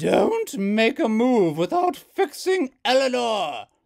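booming, very loud roar, pitch climbing. Narrating a story, Hazel's mother shouts down at the children from overhead, roaring. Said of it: "Hazel's mother roared".

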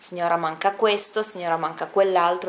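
ordinary talk, nothing marked

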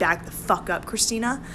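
plain

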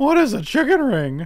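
very high, shrill, loud put-on caricature voice. Repeating a question about chicken rings: Mike impression. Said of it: "That's my impression of Mike".

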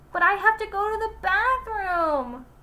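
yelled out, pitched high. Reading a story, a kid stuck on crowded school stairs answers back, yelling. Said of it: "yelled Stephen".

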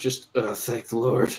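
under the breath. Speaker leaving a shopkeeper, saying an aside under the breath. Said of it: "And I say under my breath".

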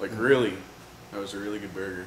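loud, chewing while speaking, mouth full. Interrupting someone filming a video to praise a burger, talking with mouth full. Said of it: "What is in your mouth?".

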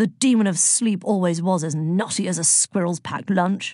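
ordinary delivery, nothing marked

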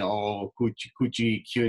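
put-on cooing baby talk. Explaining how people talk down to elders, demonstrating baby talk. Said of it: "how we talk to babies".

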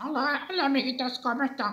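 soft, high cartoon voice. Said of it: "Sería, por ejemplo".

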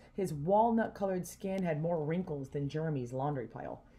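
plain reading voice

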